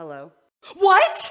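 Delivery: very loud, high, shrill horrified voice, horror-movie style. Doing an impersonation of horror-movie characters answering the phone, mock-horrified. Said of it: "my impersonation of everybody in a horror movie answering the phone".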